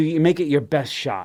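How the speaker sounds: usual speaking voice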